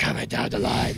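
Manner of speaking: rough, creaky, lost-voice call pushed out.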